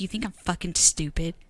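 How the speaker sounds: mock dead-serious tone. Recounting a man who got inches from the speaker's face: retelling a dead-serious question. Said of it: "Just serious".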